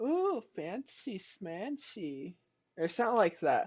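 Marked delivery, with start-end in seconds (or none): 0.0-2.4 high, soft put-on young girl character voice. Retelling what a younger girl in a game says: imitating a young girl character. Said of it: "involved a younger girl, and she's like".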